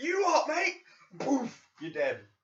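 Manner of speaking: put-on very high, loud, swooping angry British accent. Describing a film's bad guy who kills people with his Britishness: put-on angry British accent. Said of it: "he was killing people with his Britishness".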